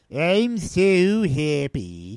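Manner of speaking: sad-sack, droopy, mopey droopy-dog voice. Retelling the film, imitating Colin Firth being droopy about the news: droopy Colin Firth imitation. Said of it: "Colin Firth is just straight up droopy dog about this".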